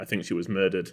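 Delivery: ordinary delivery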